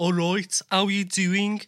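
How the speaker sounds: struggling put-on Birmingham Brummie accent. Discussing regional accents, trying to replicate one: attempted brummie accent. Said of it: "I'm trying to replicate it".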